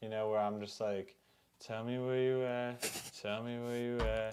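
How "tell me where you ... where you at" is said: effortless delivery, much quieter. Describing the sound they go for on a hook, quiet effortless delivery. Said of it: "quiet, like effortless sound".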